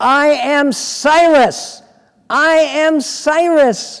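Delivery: put-on shout. Retelling how Truman answered an introduction: retelling a shout. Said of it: "and he shouts".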